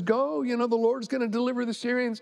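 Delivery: ordinary delivery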